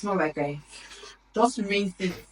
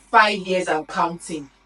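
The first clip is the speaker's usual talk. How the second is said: plain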